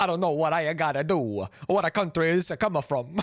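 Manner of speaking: bad, put-on Italian accent. Imitating the Italian man just heard: put-on Italian accent. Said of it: "sounds like my insensitive Italian accent".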